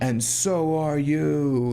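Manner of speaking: put-on falling, descending intonation. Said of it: "he descends there".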